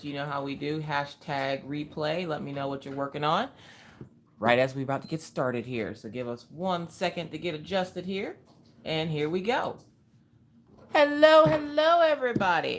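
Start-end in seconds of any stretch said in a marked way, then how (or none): 10.9-12.8 loud yelling voice. Greeting viewers as the live stream starts: yelling. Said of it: "my voice automatically go into yell mode".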